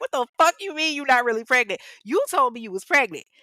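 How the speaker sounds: mock angry, fed-up outburst, loud and high. Telling a story about a man and his partner, retelling a pissed-off outburst. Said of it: "And Kaylin is pissed".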